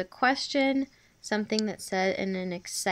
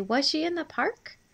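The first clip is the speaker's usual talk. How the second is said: upward question lilt on park; 6 semitones higher than usual. Explaining punctuation, the speaker demonstrates how a question is read: rising question intonation. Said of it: "your voice would go up at the end".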